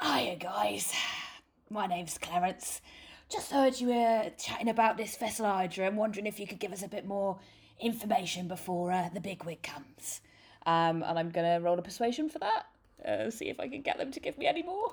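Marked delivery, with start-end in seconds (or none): 0.0-10.2 big, loud, friendly calling out. Player voicing his bard greeting guards to ask for information, as Clarence the hill dwarf bard. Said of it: "so my character is a lovely hill dwarf bard whose name is [name]. And [name] is an entertainer. He travels all around the gnome world. He likes to bolster his allies and he does love a good scrap. But".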